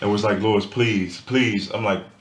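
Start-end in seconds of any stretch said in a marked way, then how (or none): 0.4-1.7 frantic, distressed, grief-stricken pleading. Retelling how their mom begged on the phone, imitating mom's distressed pleading. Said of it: "my mom called me like somebody just died".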